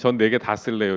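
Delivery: normal talking voice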